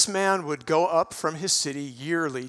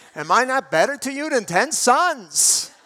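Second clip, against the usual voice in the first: put-on good, loud, high New York accent; 8 semitones higher, 6 dB louder than usual.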